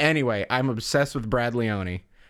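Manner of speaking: ordinary talk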